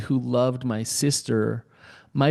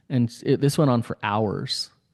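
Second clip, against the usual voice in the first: ordinary delivery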